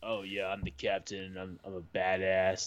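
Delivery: slow, put-on would-be badass tough-guy bravado. Mocking how Charlie talks in the movie: Charlie trying to sound badass. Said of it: "he really tries to be a badass".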